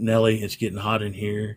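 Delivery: plain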